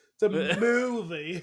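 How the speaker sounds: put-on British pop star voice. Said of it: "you gotta say it like, uh, [name]".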